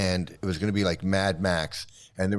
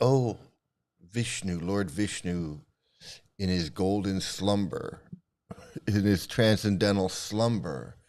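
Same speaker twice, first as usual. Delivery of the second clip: dreamy, reverent storybook-style narration. Imitating how others would phrase the Vishnu story: mock-reverent fairy-tale tone. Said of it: "They want to say it a different way. ... make it sound all fairy tale".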